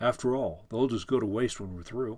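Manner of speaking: ordinary talk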